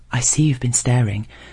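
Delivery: ordinary delivery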